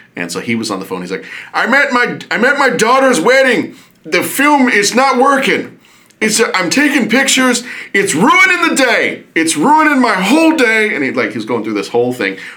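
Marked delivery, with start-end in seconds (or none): 1.5-11.0 put-on very high, slow, convincing old man voice. Retelling a friend's prank call to Kodak, doing a really good old man voice. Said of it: "he would do like a really good old man voice".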